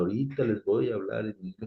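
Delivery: ordinary delivery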